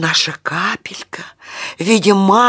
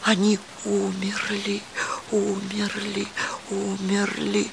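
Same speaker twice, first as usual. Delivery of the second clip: scared, frightened, barely audible half-whisper; 11 dB quieter than usual. The remaining raindrops, clinging to the cloud, half-whisper in fright. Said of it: "Испуганно шептали оставшиеся капельки".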